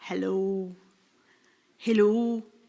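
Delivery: put-on Scottish accent. Imagining a phone call, answering it in a Scottish accent. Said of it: "That's my Scottish greeting".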